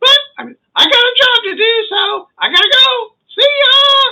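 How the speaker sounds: squeaky, very high cartoon voice. Narrating a story, voicing a character's parting line, Mickey Mouse voice. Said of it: "I'm talking like Mickey Mouse instead".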